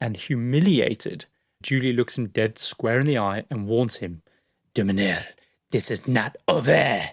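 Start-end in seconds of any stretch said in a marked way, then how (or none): 4.7-7.0 put-on French-accented voice. Retelling Julie warning Dumanil: French accent. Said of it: "I think your French accent is getting better".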